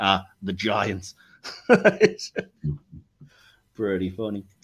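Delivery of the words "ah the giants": put-on sarcastic voice, lower. Recapping a scene where Kirk names obscure authors, Spock replies: mock-sarcastic as Spock. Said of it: "Spock just sarcastically goes".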